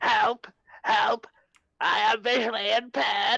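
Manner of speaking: flat, mechanical, robotic alien voice. Retelling a film scene where a Dalek gets shot in the eye stalk, Dalek voice. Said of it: "The Dalek goes".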